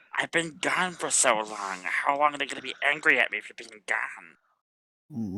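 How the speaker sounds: whispering as low as possible. A character speaks into her ear, whispering as low as possible. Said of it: "he's whispering this as low as possible".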